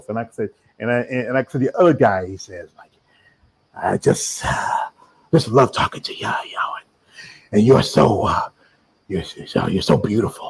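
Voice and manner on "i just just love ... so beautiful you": mock lovestruck voice, lower. Imitating another guy who gushes over a guest: imitating a smitten fan. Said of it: "You actually do a really good voice".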